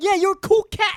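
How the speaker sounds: high, loud voice in sixties-cool slang style.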